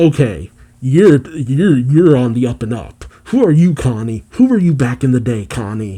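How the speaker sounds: ordinary delivery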